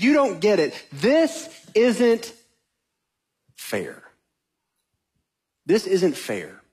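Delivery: mock pointed, reproachful, swooping, accusing complaint. Speaker acting out a prophet complaining to god, mock-accusing. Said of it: "This is Elijah accusing God".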